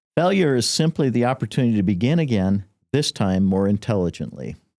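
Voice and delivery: ordinary talk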